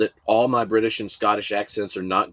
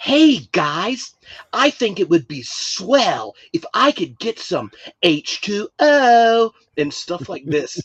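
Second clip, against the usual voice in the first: put-on, higher-pitched outsider's American accent; 10 semitones higher, 4 dB louder than usual. Retelling how he asked for water, imitating americans: american accent. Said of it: "him imitating Americans was the funniest thing".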